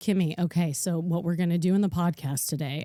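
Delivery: put-on low, business-mode voice. Describing how the other host sounds in business mode, imitating Allie's low business voice. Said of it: "Her voice goes low".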